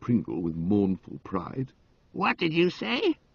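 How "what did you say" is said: suspicious, wary, distrustful, pitched up. An elderly aunt asking about a whispered remark, suspiciously. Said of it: "Asked the exhibit suspiciously".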